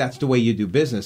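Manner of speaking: ordinary talk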